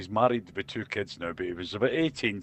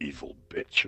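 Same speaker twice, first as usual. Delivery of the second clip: put-on mutter under breath, lower and quieter; 6 semitones lower, 4 dB quieter than usual. Retelling a punishment by his mother, imitating muttering under breath. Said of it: "I'm kinda under my breath going".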